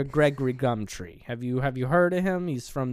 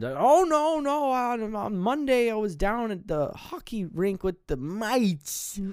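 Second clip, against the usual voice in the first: put-on high, slow, drawn-out elderly man voice; 8 semitones higher than usual. Asked whether he saw anything odd on Monday night, the old man answers, old man voice. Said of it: "old man".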